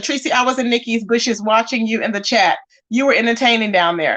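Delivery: ordinary talk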